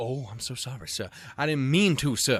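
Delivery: put-on southern gentleman voice. Acting out a broken computer apologizing: Colonel Sanders voice. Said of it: "Why the fuck do you sound like Colonel Sanders?".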